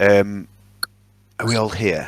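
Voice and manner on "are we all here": whisper, quieter. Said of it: "I'm gonna whisper".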